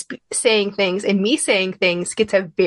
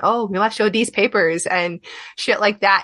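normal talking voice

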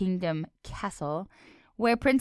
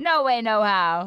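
really bad, loud, fake New Jersey accent; 2 semitones higher, 5 dB louder than usual. Joking about accents in a chat: bad new jersey accent. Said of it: "That was my really bad New Jersey accent".

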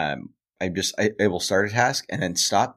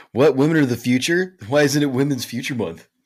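most annoying douchey tone, loud and high; 5 semitones higher, 5 dB louder than usual. Speaker jokes back to the other speaker: mock douchey voice. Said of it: "the most like annoying like. Possible douchey voice".

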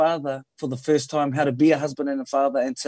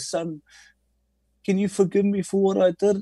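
play-acted tearful, high crying voice, pleading tone; 5 semitones higher than usual. Retelling how his dad rings up asking forgiveness: imitating his dad crying. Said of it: "he'll just ring up and cry and go".

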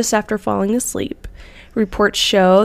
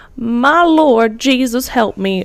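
slow rural Southern American countryman drawl; 3 semitones higher, 4 dB louder than usual. Retelling what a husband said on waking, in a rural southern american accent. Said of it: "I love the accent. ... that sounded like a Countryman ... old Southern people being like".

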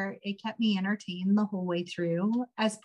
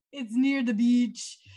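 horrible, fake, put-on Jamaican accent; 3 semitones higher than usual. Quoting a film character who pretends to be jamaican: imitating a bad fake jamaican accent. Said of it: "When he's pretending to be Jamaican".

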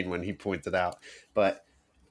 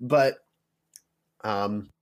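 plain

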